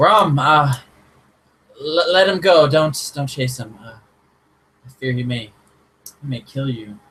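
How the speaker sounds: calling out after someone. Voicing a character calling after ram to stop: calling out. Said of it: "she kinda calls out".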